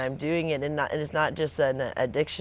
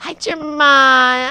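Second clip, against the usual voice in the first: goofy put-on squeal, very high and very loud; 11 semitones higher, 11 dB louder than usual. Greeting a pet hummingbird by name in a silly put-on voice. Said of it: "he likes when I use that silly voice".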